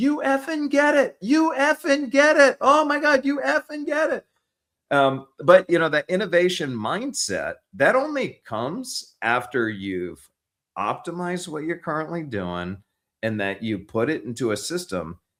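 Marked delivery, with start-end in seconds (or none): 0.0-4.3 mock shrill screaming, very high. Retelling a call where someone screamed over the phone: imitating someone screaming. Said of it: "he started screaming over the phone".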